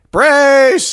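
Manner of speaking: calling out high and loud.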